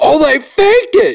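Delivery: very high, voice-cracking, drawn-out scream. Retelling a friend's reaction while watching a football game, imitating Seth's cracking scream. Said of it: "with a cracking voice".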